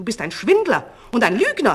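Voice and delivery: booming, very loud shout with swooping pitch. In a story, the false king shouts at the King of Tibet: shouted. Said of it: "schrie der falsche König".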